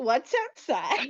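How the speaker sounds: playful, joking, teasing ribbing. Narrating a kid's reply after being told to explore outside, joking. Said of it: "She is going to jokingly say".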